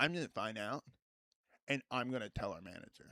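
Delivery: low, solemn, dead-serious, dead-earnest delivery. Retelling a coworker confronting the speaker at work, imitating someone super serious. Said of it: "he comes up to me and like super seriously".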